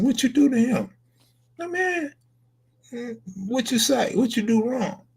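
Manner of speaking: very high, heavily laid-on sarcastic tone. Acting out a reply to someone who got beaten up: acting out sarcastic tone. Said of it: "I'll be so sarcastic".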